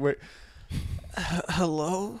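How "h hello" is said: sleepy, stumbling, groggy just-woke-up voice. Imitating a friend who answered the phone just woken up: imitating someone just woken up. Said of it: "This is my impression of you".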